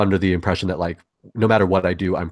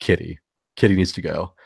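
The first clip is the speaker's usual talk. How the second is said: put-on whispered voice. Retelling how two others whispered a name in the ear: imitating a whisper. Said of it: "they just whisper in my ear".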